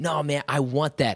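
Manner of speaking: loud, slow, sarcastic insistent tone.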